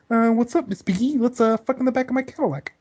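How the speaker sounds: very high cartoon frog puppet voice. Performing a sentence someone just gave you on request, Kermit the Frog impression. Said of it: "Kermit the Frog impression".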